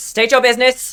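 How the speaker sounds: shrill, very high, very loud call-out. Voicing a dandelion guard calling to approaching players over wind: dandelion guard calling out over wind. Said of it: "you hear a voice ... over the howling wind ... and it says".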